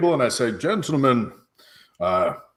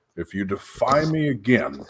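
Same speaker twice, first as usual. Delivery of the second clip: threatening whisper, quieter; 2 semitones lower, 4 dB quieter than usual. Playing a character who warns a companion at a table: whispering a threat. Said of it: "I whisper to Lupo".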